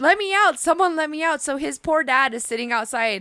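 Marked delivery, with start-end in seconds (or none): 0.0-1.4 high, loud, screaming, begging cry. Retelling how she yelled while stuck in a bathroom: imitating someone screaming. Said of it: "she's literally just screaming".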